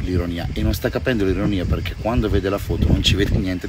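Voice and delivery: ordinary delivery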